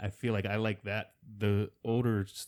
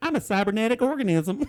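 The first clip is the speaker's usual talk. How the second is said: mock hillbilly drawl, higher and louder; 13 semitones higher, 7 dB louder than usual. Imitating an American actor dubbing a movie line: put-on hillbilly accent. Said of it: "you're a female hillbilly".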